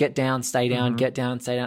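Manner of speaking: put-on measured, controlled, calm delivery. Retelling a robber in charge ordering hostages: imitating measured, controlled commands. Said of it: "much more measured and controlled".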